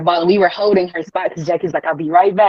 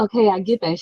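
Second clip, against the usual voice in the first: unexcited, unimpressed mom voice; 3 semitones higher, 3 dB quieter than usual. Retelling her mom's reply on the phone, imitating an unexcited mom. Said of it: "not excited about anything".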